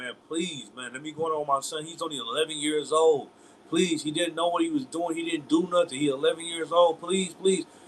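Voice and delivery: imploring, begging tone. Retelling how a mother pleaded with police: imitating a mother begging. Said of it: "she was begging like that".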